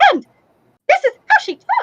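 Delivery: very high-pitched, swooping, sing-song talk. Speaker demonstrates how Juana normally talks: Juana impression. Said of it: "very high pitched".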